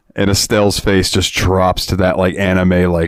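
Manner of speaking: ordinary talk, nothing marked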